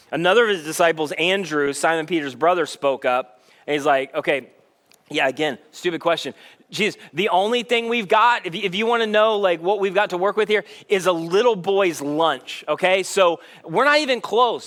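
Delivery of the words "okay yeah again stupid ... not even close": normal talking voice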